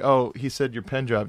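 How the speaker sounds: ordinary talk, nothing marked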